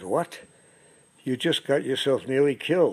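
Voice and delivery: ordinary talk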